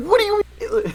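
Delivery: play-acted, very high, all-mad, angry tone. Retelling how a classmate got kicked out of class, imitating someone getting mad. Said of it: "he got, like, all mad".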